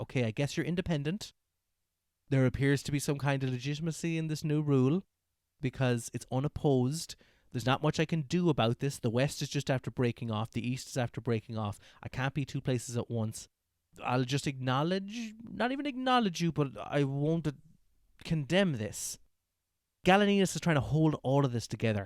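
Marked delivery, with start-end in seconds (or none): none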